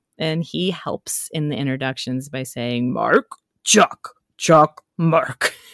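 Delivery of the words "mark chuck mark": rough, grinding gravelly tone. Retelling a ghost making introductions: gravelly Cookie Monster voice. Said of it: "This gravelly voice".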